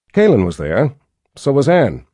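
plain reading voice

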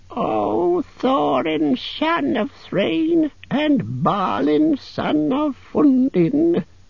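very high-pitched, croaky, aged raven voice. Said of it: "he croaked".

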